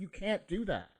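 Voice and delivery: mock angry woman's voice. Retelling what the lady on the bench said: imitating an angry lady. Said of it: "the lady on the bench was getting angry".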